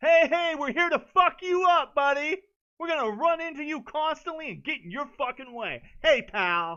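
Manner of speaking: shrill, very loud, high-pitched annoying yelling voice. Complaining that game buddies keep getting in the way: imitating annoying skater buddies. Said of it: "your offline skater buddies show up".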